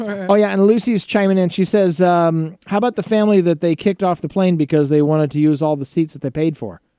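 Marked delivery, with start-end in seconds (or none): none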